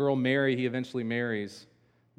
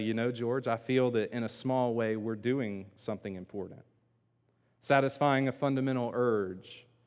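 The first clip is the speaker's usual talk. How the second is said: usual speaking voice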